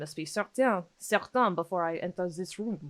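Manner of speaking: bad, horrible Belgian accent. Imitating a character who must be certain before entering a room: horrible Belgian accent. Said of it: "that's a horrible Belgian accent".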